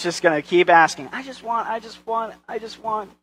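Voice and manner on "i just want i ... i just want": put-on high, hushed, whiny, demanding child voice. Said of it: "It's that same attitude".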